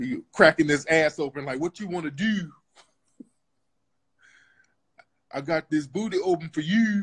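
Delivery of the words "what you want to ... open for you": put-on very moist Baltimore accent. Mocking someone from Baltimore by quoting him: Baltimore accent. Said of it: "saying shit real moist in a Baltimore accent".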